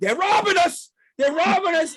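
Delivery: mock, very high, shrill, loud, repeated yelling. A father retelling what he yelled getting into the car: retelling his own yelling. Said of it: "I get in the car and I'm yelling".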